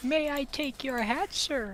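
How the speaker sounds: high, overly courteous, polite customer-service voice. Offering on stream to do the customer service voice, then doing it. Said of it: "I can do the customer service voice".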